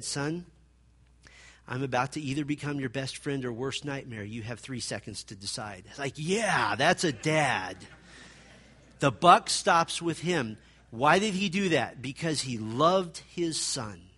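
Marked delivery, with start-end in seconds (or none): 0.0-5.8 put-on calm, patient tone, lower and quieter. Retelling what a dad said to his son, imitating calm, patient tones. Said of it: "in very calm, patient tones".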